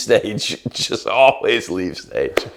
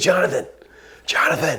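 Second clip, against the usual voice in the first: high-pitched whisper-yell, yelling and whispering at once; 5 semitones higher than usual. Retelling a fellow performer calling out after leaving the stage, retelling a whisper-yell. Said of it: "But he's yelling, but he's whispering".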